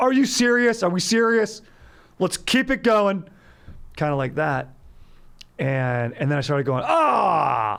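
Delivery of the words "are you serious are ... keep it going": very high, awkward, self-conscious shout. Retelling walking dogs and meeting a coyote, re-enacting a yell at a coyote. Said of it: "self-conscious about my primal yell".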